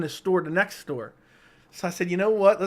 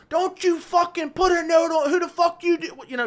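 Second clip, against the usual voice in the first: mock furious lunatic screaming, much higher pitched; 11 semitones higher, 4 dB louder than usual. Retelling a man yelling at the car over a note, imitating his lunatic screaming. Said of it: "Just screaming like a lunatic".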